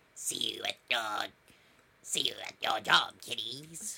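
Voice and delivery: storybook witch character voice. Telling a podcast co-host they sounded like a witch, in a witch voice. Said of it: "sounded like a witch. Like".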